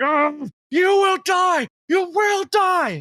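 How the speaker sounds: very high, slow, drawn-out agonized scream. A game master voices a wounded foe as players tear into him, screaming in agony. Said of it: "he just screams in agony".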